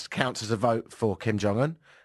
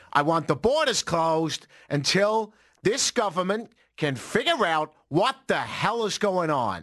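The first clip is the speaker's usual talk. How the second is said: put-on Boston accent, pitched up; 6 semitones higher than usual. Showing a listener your old version of an impression, failed Trump impression, sounds very Bostonian. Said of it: "That's a good American accent, not Trump. That sounds very Bostonian".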